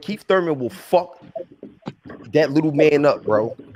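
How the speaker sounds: menacing, hostile, aggressive tone. Talking boxing with friends, saying a fighter would beat another: hostile voice. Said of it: "so much hostility in your voice".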